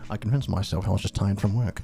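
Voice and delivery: really quiet British voice. Reading a line as Ferb: Ferb voice. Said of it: "Ferb is just, like, really quiet British".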